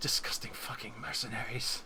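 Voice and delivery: huffy, angry muttered grumbling. Describing her storming off on a broken leg, imitating her grumbling. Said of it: "you can hear her just grumbling like".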